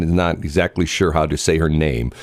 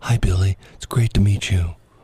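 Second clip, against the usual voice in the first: mock whispering; 2 semitones higher than usual. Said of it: "You have to whisper to her".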